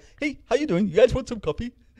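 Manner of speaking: high rock-monster voice. Show how an intimidating rock monster actually talks, in a Korg voice. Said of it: "And then his voice is like".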